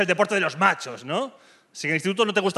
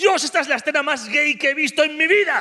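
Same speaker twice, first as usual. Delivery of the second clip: acted, high, wild screaming and yelling crowd cry; 8 semitones higher than usual. Retelling how the stadium crowd reacted to a goal, imitating their screaming. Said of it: "gritando y fue como".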